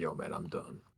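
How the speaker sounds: orcish kind of voice. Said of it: "but in an orcish kind of way".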